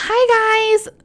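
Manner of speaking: squeaky, very high voice with long drawn-out "hi". Asked to do an impression of a woman from class, the speaker imitates her high-pitched voice. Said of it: "can you do an impression of her?".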